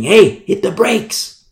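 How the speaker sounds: put-on screaming. Retelling a fast ride on a dirt road toward a cliff, re-enacting screaming. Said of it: "I start screaming".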